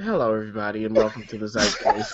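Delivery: very low voice like a pilot's cabin announcement. Redoing a show's opening greeting: sounding like a pilot. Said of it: "it was like this".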